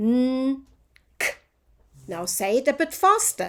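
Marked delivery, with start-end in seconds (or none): 0.0-1.3 slow, drawn out. Teacher sounding out letters with the class, said slowly.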